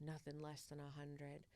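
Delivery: very quiet, very low, hushed half-whisper. Retelling what someone half-whispered to him, imitating someone half-whispering. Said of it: "Like he's whispering it to me".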